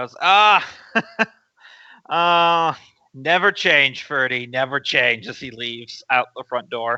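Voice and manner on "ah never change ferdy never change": slow, hearty speech through a belly laugh. Voicing a character who gets up from the table: deep belly laugh while talking. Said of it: "he just starts doing a deep belly laugh".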